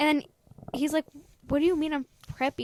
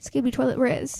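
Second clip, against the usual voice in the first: put-on deadpan, flat, expressionless voice; 3 semitones lower than usual. Imitating Katya saying a Gen Alpha phrase, dead serious. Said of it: "she's, like, dead serious".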